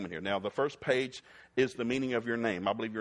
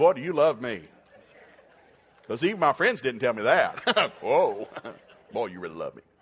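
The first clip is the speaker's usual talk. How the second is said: loud, facetious, not-serious, tongue-in-cheek teasing tone; 8 dB louder than usual. Speaker answers a spouse pointing out their faults, facetious. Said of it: "I'm being facetious now".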